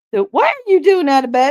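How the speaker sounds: very high put-on nurse voice. Telling the other person you can hear their nurse voice, then doing it; nurse voice. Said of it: "I can hear like the nurse voice".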